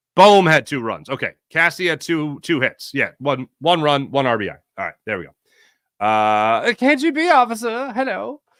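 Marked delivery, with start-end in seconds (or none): 6.8-8.4 very high-pitched, put-on German accent. Speaker playfully greets a KGB officer, in a German accent. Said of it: "I don't know why I do a German accent".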